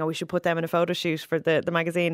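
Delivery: plain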